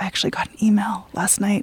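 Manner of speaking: soft, unvoiced whisper.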